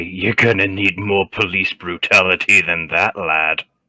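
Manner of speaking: goading, taunting tone. Smiling at a guard after being hit, in-character taunt. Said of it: "I'll just smile at him and say".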